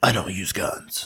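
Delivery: breathy, airy, whispered superhero voice. Joking about the Batman movies, quoting the hero: Batman voice. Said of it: "every time you guys make that voice".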